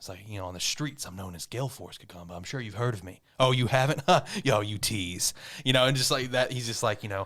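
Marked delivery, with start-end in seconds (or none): 0.5-5.3 seductive, epic, grand monologue voice. Retelling an episode's opening monologue: seductive Gagamba monologue impression. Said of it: "epic, like, seductive-esque, like, Gagamba, like, monologue".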